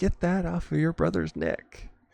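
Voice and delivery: put-on, high, shrill, frantic screaming. Retelling how mom freaked out at the children: imitating someone screaming. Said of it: "she just starts screaming".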